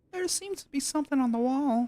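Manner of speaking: put-on, mock girl voice. Rereading a game line after announcing a different voice: put-on girl voice. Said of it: "I can do a girl voice".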